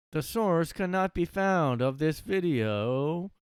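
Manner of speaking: slow, oddly inflected speech. Mocking the video narrator's line about the source: imitating slow speech, weird inflection. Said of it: "I can barely do it".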